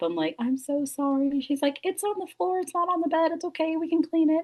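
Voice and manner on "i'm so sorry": put-on drunk, apologetic voice, higher, slower. Retelling apologizing to Nikki while drunk and throwing up, acting out a drunk apology. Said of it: "apologizing to Nikki while throwing up".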